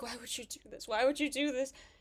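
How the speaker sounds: mock, tearful, begging voice on the brink of tears. Retelling a cartoon scene, imitating Gumball near tears. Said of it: "Gumball's on the brink of tears".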